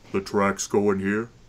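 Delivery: flat, monotonous, dead-level delivery. Narrating the game, the speaker goes back to voicing Rildanid, in a monotonous voice. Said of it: "now I have to get back to my fucking monotonous voice".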